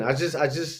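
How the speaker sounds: plain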